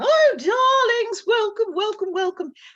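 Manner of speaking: put-on very high, loud British accent, calling out. Recalling a story time performance, greeting the audience in a british accent. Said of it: "and a British accent".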